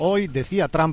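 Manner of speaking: ordinary talk, nothing marked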